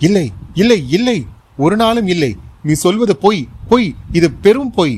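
loud, high-pitched shout at top of lungs. Jolted by a woman's revelation, a man denies it, shouting loudly. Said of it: "உறக்க கத்தினான்".

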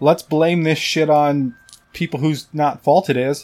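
ordinary talk

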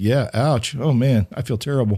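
ordinary talk

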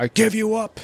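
mock, very dramatic, high, grand, formal delivery. Imitating a film character renouncing love to heaven: dramatic formal pronouncement. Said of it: "puts his arm out and he's like".

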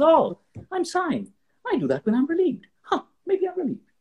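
very high, swooping, theatrical, dramatized voice. Acting out the mind noticing the body sighing: dramatized inner voice. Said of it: "I'm dramatizing it".

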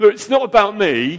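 booming, shrill, very loud, high-pitched shouting. Preaching about being on an adventure with Jesus: shouting. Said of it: "Sorry, I'm shouting".

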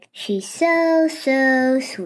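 dripping, mocking sarcasm in a slow drawl. Giving an example of sarcasm aimed at someone in the room: imitating a sarcastic remark. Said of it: "the person who was sarcastic was like".

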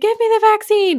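very high, shrill, loud yelled scream. Explaining a guideline with a hypothetical patient at the clinic door; imitating someone screaming.

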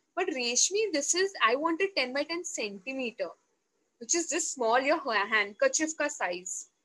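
usual speaking voice

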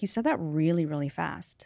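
usual speaking voice

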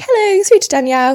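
put-on bright, high, cheery receptionist voice. Retelling answering the phone at work, imitating own cheery phone greeting. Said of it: "you sound so cheery".

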